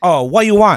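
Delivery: loud, high-pitched put-on Vietnamese accent. Retelling being asked at a banh mi place, imitating a Vietnamese guy's accent. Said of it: "it sounded like a Vietnamese guy".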